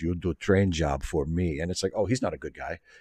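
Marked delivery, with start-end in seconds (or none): 0.0-1.6 put-on, menacing, low, sinister Russian villain accent. Explaining why a character reads as a bad guy, in a sinister Cold War villain accent. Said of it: "When he talks like this".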